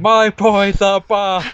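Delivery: excited, high, very slow, very drawn-out scream. Imagining watching the other person's future stream, mock screaming. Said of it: "I'm going to spend the entire time screaming".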